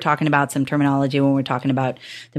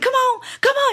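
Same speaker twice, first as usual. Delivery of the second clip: very high put-on Southern woman's accent. Recalling how a woman cheered you on while you were dying, imitate Amberly's Southern accent. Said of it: "with her like her Southern accent".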